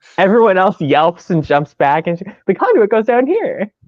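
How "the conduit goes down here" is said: put-on cheery, breezy, bright voice, pitched up. Retelling how a character popped out of the floor, imitating a very chipper voice. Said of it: "Just a very chipper".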